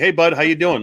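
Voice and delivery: put-on Canadian accent. Imitating how uncles greet a nephew: imitating uncles' Canadian greeting. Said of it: "that's what all my uncles would call me".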